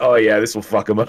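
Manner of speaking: plain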